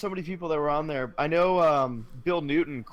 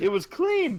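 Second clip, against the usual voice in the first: imitated surprised tone, pitched higher; 10 semitones higher than usual. Retelling walking into the bathroom: imitating own surprised tone. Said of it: "You sound so surprised".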